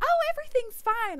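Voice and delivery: mock cheery doctor voice, very high, loud, chirpy.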